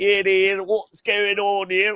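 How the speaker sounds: put-on very high-pitched old British constable voice. Recalling a bobby character his father showed him, in an old British cop voice. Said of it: "a old British cop".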